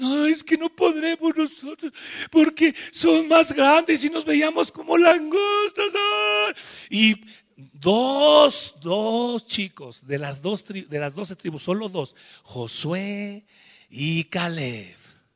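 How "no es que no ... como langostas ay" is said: mock high, tearful, whimpering whine. Retelling how the returning spies complained: imitating whiny crying. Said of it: "vienen chillando, llorando ahí".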